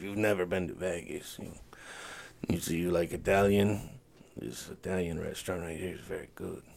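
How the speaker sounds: put-on very soft, low, hushed, raspy Albanian accent. Retelling an old Albanian man telling them places to go in Vegas: raspy Albanian accent. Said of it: "Albanian guy who talks like this all the time, and he has a very raspy voice".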